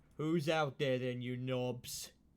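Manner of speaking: ogre-like heckling voice. Game master voicing someone calling out from inside, in a very deep ogre voice. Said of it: "the voice is very deep and sounds like the same as the ogre's".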